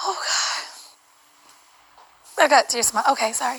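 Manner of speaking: breathless, winded voice. Speaker apologizes after tears come, out of breath. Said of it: "I'm out of breath".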